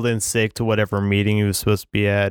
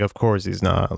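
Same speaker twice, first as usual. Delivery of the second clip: ordinary delivery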